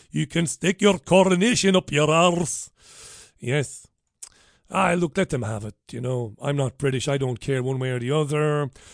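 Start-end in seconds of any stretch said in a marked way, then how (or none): 0.2-2.7 put-on Scottish accent, pitched higher. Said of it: "that's about my best effort there".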